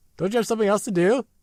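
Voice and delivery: high-pitched, fast delivery.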